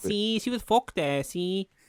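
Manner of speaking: put-on mixed Scouse and Mexican accent. Retelling a moment, speaking as Santiago in a Scouse Mexican accent. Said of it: "Scouse Mexican".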